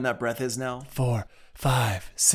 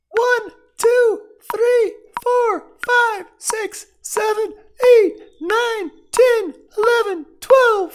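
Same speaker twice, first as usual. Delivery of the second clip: shrill, very high, loud, slow cartoonish voice; 10 dB louder than usual. Counting to twelve in a vocal test, in a Mickey Mouse voice. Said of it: "let's do a high-pitched voice".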